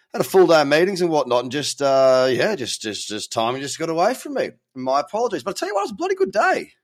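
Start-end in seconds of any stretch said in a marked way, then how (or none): 5.5-6.7 very high-pitched, squeaky voice. Telling listeners it was a good trading day: high-pitched voice. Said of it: "that was a high-pitched voice on that".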